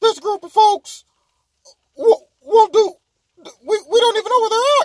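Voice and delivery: very high, loud squeaky voice. Mocking a man's reply by quoting him: Mickey Mouse voice. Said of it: "came back with his Mickey Mouse voice".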